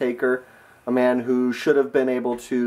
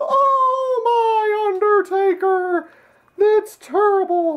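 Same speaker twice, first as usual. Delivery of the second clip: very high, squeaky cartoon mouse voice, long "oh"; 4 dB louder than usual. Walking up behind people to annoy them, voice like a Mickey Mouse impression. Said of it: "too much like my Mickey Mouse impersonation".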